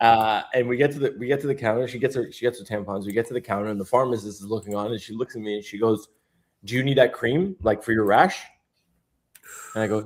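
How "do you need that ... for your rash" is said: imitated deadpan, straight-faced delivery. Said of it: "Dead, dead, dead straight face".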